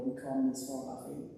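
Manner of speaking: ordinary talk, nothing marked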